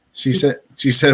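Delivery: ordinary delivery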